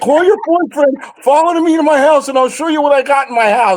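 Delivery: acted-out, high-pitched, imploring, pleading begging tone. Retelling how a friend begged a girl to follow him home: mock pleading. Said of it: "He once begged a girl".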